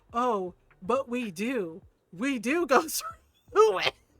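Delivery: sly, knowing, drawn-out aside. Retelling what a colleague said to you in reply, retelling a quiet remark. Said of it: "he very quietly like looked side eyed".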